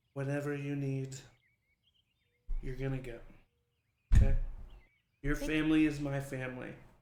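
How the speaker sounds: put-on, very drunk-sounding voice. Voicing a very drunk character offering family sanctuary: acting very drunk. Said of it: "she's very drunk".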